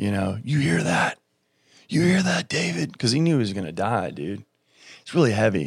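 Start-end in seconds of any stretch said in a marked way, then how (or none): 0.4-3.0 high-pitched screaming. Retelling a friend screaming through the phone at a concert: imitating someone screaming. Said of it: "he's screaming through the phone at me".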